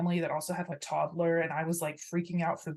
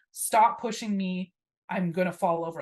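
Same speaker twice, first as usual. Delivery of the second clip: mock yelling, screaming; 4 dB louder than usual. Retelling being shoved toward a trash can by a rushing crowd: imitating own screaming. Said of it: "And I'm screaming".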